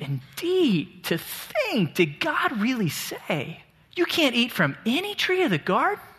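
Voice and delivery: incredulous, taken-aback, surprised disbelief, high and slow. Speaker acting out Satan's question to Eve, mock-surprised incredulous tone. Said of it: "It's like Satan is surprised".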